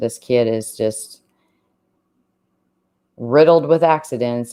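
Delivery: heavy, super sarcastic tone. Commenting on a suspect who called a killing an accident: super sarcastic. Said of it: "I'm being super sarcastic there".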